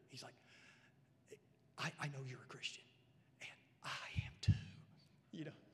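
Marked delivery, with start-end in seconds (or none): 1.8-5.5 low, secretive, confiding conspiratorial whisper. Retelling what a coworker said to his buddy at work, imitating a conspiratorial whisper. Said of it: "kind of whispers".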